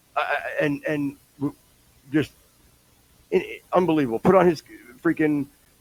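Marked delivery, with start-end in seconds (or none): none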